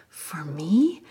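mock stunned, incredulous disbelief. Retelling a stranger's reply on being handed a coin: imitating incredulous question. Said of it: "she looked incredulous".

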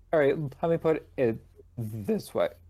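voice breaking. Chatting with co-hosts, the speaker talks on with a cracking voice. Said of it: "my voice is cracked".

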